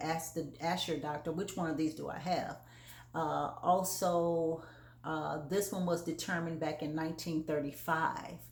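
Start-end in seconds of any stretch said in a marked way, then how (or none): none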